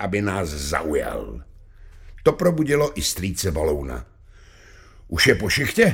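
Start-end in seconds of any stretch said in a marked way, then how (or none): 5.1-5.9 nervous, anxious, louder. Uncle Baloun, just woken by the music, asks a question, nervous question. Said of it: "Zeptal se nervózně".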